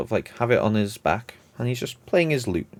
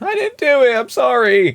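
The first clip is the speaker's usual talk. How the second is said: put-on very high, innocent, childlike pleading voice; 9 dB louder than usual. Retelling a scene where a nine-foot Goliath hides something behind his back, imitating a childlike, innocent voice. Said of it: "very childlike, innocent, going".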